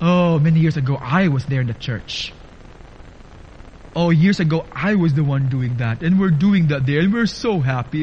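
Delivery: proud, bragging, boastful tone. Speaker imitates church members who talk about years ago, mimicking a proud boast. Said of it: "they even say proudly".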